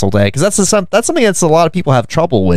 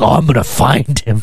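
put-on gleefully determined, eager, all-in voice. Retelling a comedy sketch, imitating a dad who is really into it. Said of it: "how into it the dad is".

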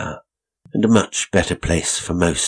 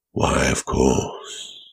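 deep laughing voice, much lower; 5 semitones lower than usual. An unseen voice answers a woman musing aloud to herself, deep and laughing. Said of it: "came a deep, laughing voice".

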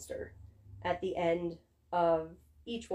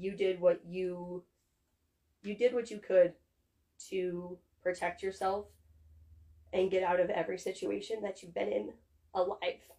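emotional voice breaking and cracking as it goes. Speaker addressing every version of their younger self, voice cracking. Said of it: "my voice is cracking".

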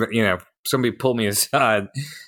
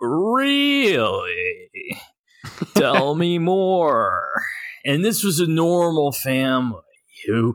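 very slow, swooping, drawn-out really; 6 semitones higher than usual. Imitating Bill Hader doing the Dateline NBC host: Bill Hader's Dateline NBC host impression. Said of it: "it's the worst impression".

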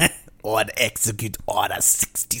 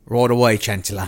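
put-on Australian or New Zealand accent. Acting out a clone answering the Chancellor: clone trooper voice, Australian accent. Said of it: "He immediately goes to the Aussie".

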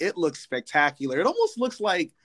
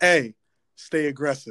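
put-on serious, stern voice; 3 dB louder than usual. Retelling what a coworker always said in the hallway: imitating James Dunn's serious greeting. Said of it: "he'd always have a real serious face".

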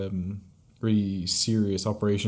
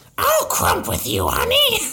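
put-on cartoon voice, high, loud and swooping; 7 dB louder than usual. Asked to try Marge, the speaker goes ahead: Marge voice. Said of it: "I can do Marge".

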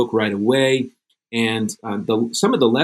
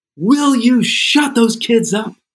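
shrill, very high, top-of-the-lungs scream; 12 semitones higher, 4 dB louder than usual. Retelling how a woman at the next restaurant table screamed, imitating a woman screaming. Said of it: "she screams at the top of her lungs".

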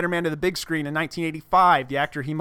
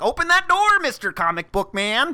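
put-on high, swooping, geeky sixteen-year-old nerdy voice; 9 semitones higher than usual. You tease the person you are talking to by mimicking someone at 16, namely them. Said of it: "every time I'm mimicking you when you're 16".

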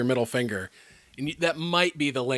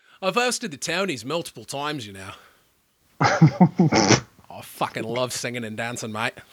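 put-on Australian accent, showbiz host style; 4 dB louder than usual. Joking with co-hosts about the impression, doing a Hugh Jackman impression. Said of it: "your Hugh Jackman impression".

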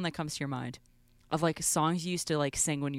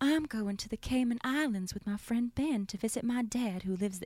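fancy, high, aristocratic Southern belle accent; 5 semitones higher than usual. Asked by another speaker to do a Southern belle, in an aristocratic Southern belle voice. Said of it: "An aristocratic Southern belle".

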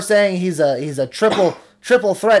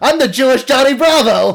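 loud, higher-pitched, emphatic delivery; 7 semitones higher, 5 dB louder than usual. Repeating the other person's joke, said louder. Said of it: "I'm going to take your joke and say it louder".

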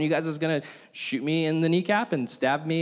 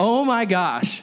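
ordinary talk, nothing marked

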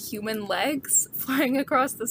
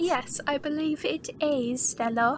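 clumsy, overdone, fake British accent; 5 semitones higher than usual. Podcast host wrapping up the episode, answering a co-host, awful British accent. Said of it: "this awful British accent".

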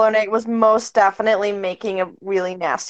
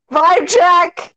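sudden, high, loud shouted yell; 8 semitones higher, 5 dB louder than usual. In a roleplaying game, a player voices their character's line, yelling. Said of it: "just yells".

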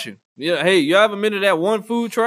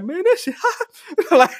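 put-on high-pitched voice; 10 semitones higher than usual. Recalling how he sounded after losing his voice, retelling a high-pitched voice. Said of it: "It went high pitch".

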